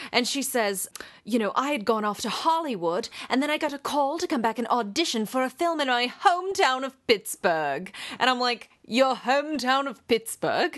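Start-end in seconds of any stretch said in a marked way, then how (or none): 1.2-7.9 put-on, nearly English lilt over American speech. Describing a woman in a documentary, quoting her in a strange nearly English accent. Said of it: "nearly English accent that cracked me up".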